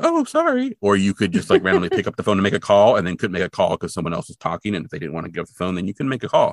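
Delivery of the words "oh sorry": surprised, very high, squeaky voice. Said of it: "and they'd be like".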